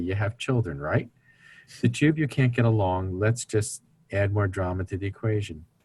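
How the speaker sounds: dry, mock sarcastic, tongue-in-cheek tone. Retelling a remark to a couple who can't get along: sarcastic. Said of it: "I sarcastically say".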